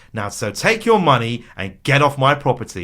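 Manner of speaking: play-acted, loud, furious, fed-up telling-off. Retelling a contestant's rant at the loser's table: imitating an angry rant. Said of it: "the rant is like".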